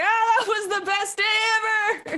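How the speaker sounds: very high, maniacal cackling laughing yell. Speaking in character over the comms after an explosion: laughing maniacally and yelling. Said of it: "laughing maniacally and yelling".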